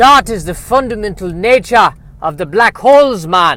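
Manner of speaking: high, loud fake Jamaican accent. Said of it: "you're trying to sound like someone who's from Jamaica".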